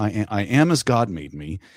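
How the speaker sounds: put-on calm, flat deadpan delivery. Retelling a man's line from a film scene, imitating calm deadpan. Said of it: "without confrontation".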